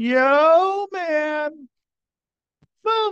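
talking with mouth full of food. Greeting listeners at the start, talking with mouth full. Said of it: "with the mouthful of food".

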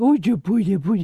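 put-on baby talk, nice and loud. Recapping a scene where Booth plays with the baby, Booth's baby talk. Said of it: "like talking like a baby talk".

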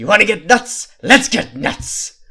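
very loud, high, drawn-out, slow roaring villain voice. Performing a requested movie line, slipping into a Heath Ledger Joker voice. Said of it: "I did feel myself slipping into the Joker".

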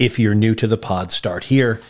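ordinary talk

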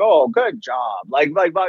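slow, joking, sarcastic, mocking tone. Retelling how she teases the speaker, imitating mocking praise. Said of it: "she'll kind of like mocking, like joking".

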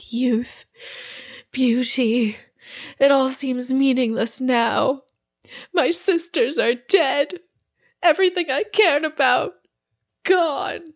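high-pitched, weepy, tearful crying voice. Storyteller voicing Lamia after she drops her weapons, crying. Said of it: "she starts, like, crying".

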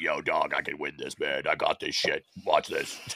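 very deep, rough-throated, hoarse rasp. Describing the five-time donut-eating champion, imitating Mike Ruster's hoarse voice. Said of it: "he talks like this, like he's got a horse throat".

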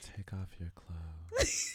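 slow, sultry and drawn out. Retelling how a woman delivered her line, imitating a slow, sultry line. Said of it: "says it slow".

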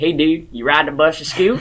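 put-on heavy, laid-on, thick country accent. Speaker quotes the first thing a kid said to him, in a thick accent. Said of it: "thick accent".

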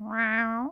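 parrot-style copy of a cat's meow. Retelling a parrot copying a cat: imitating a parrot meowing. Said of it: "And then Sophocles goes".

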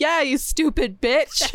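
pretend angry outburst. Retelling how her husband walked around hitting walls, imitating a mock-angry rant. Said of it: "walked around the house hitting all the walls".

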